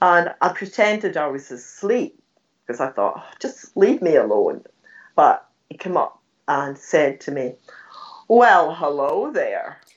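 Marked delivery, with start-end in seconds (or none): 8.3-9.7 put-on, American-sounding accent. Retelling a stranger greeting the speaker while she pretended to sleep, american accent. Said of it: "in this American voice".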